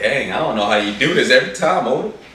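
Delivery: high, loud, emotional, choked-up voice. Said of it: "you're a little choked up".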